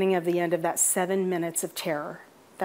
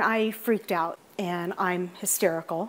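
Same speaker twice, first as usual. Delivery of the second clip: ordinary talk, nothing marked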